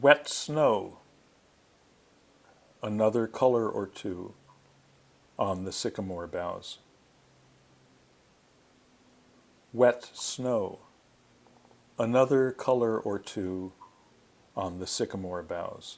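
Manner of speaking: slow, unhurried, deliberate reading with space around words. Reading short lines aloud twice to listeners before asking their response, slow reading. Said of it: "I'll read slowly".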